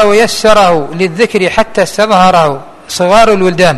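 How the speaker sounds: ordinary talk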